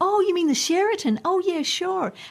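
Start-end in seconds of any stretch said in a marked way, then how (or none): 0.0-1.2 put-on loud American accent, voice pushed very high. Retelling repeating himself after they misunderstood his accent, in an american accent. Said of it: "I had to speak with an American accent".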